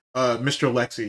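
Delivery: normal talking voice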